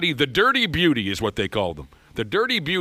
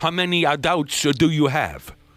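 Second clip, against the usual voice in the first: heavy, thick put-on French Canadian accent. Imitating a Border Patrol agent questioning a drunk friend, in a thick French Canadian accent. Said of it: "he has the accent, I'm doing my best".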